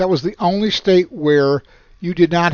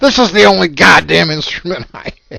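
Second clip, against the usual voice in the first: loud, angry blowing-up outburst; 3 semitones higher, 7 dB louder than usual. Retelling how a colleague stormed into the office: imitating an angry boss. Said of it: "and he was mad".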